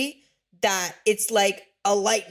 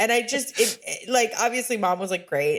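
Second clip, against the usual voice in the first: normal talking voice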